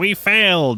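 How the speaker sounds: mock whiny, sulky, very high whining. Retelling how a defeated character reacted: imitating whining. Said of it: "everyone's whining".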